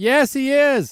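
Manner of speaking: very high, loud shout projected upward. In a role-play game scene, a player's character answers, yelling up. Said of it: "I'll yell up".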